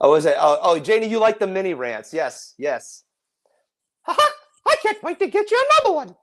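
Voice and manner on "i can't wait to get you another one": squeaked out high-pitched with swooping pitch. A host answers Janie, doing a Mickey Mouse voice. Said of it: "That's my Mickey voice for tonight".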